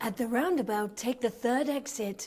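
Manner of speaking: car sat-nav announcement voice. Asked to show her sat-nav voice, the speaker performs it: sat-nav voice. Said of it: "asking [name] if she can do her sat-nav voice".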